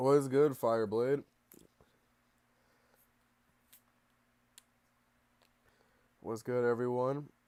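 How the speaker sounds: sick, ill-sounding voice. Greeting viewers at the start of a stream: sick voice. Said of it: "Your boy is sick right now".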